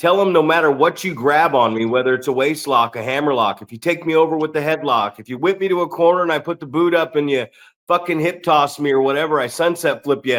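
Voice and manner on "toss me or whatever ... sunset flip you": normal talking voice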